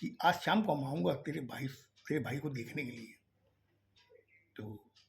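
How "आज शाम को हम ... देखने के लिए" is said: plain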